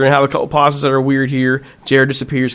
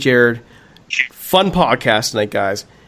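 usual speaking voice

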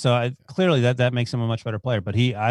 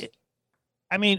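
higher, stuttering, stammering false start; 9 semitones higher than usual. Starting to ask another speaker a question: stuttering. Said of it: "I'm stuttering".

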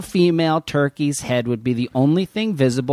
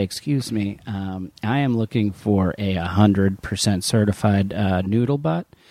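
low, solemn, dead serious delivery; 6 semitones lower than usual. Retelling a playful bit, coming in to ask for something: imitating a very serious tone. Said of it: "I come in very serious and I say".

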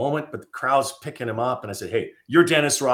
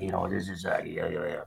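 mock drunken mumbling, lower and quieter; 6 semitones lower, 8 dB quieter than usual. Retelling a drinking speaker mumbling into the mic: imitating drunken mumbling. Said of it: "he's mumbling into the mic".

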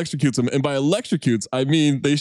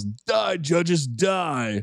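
small shouted battle cry, mild yell, "die" drawn out; 2 semitones higher, 4 dB quieter than usual. Retelling a movie scene where Remar yells at the judges: imitating Remar yelling. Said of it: "Remar yells".

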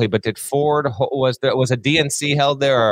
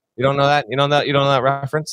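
normal talking voice

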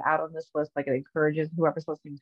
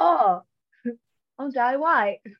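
put-on New Zealand accent, loud and pitched up; 8 semitones higher, 5 dB louder than usual.

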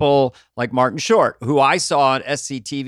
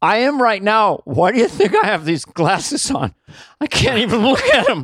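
speaking through tears, crying, high and swooping; 8 semitones higher than usual. Asked why they are crying, admitting they are crying right now. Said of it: "Why are you crying?".

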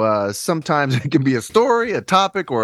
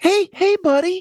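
high-pitched voice. Suggesting a voice to try, the speaker demonstrates a high voice. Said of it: "I feel like a high voice would work. You know, like".

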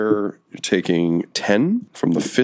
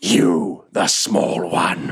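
put-on barrel-chested brute voice. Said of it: "he points at you and he says".

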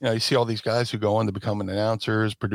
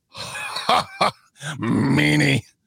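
rough, raspy, high voice with swooping pitch; 5 semitones higher, 3 dB louder than usual. Retelling meeting Vince after the show: good Vince McMahon impression. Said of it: "That was a good impression".

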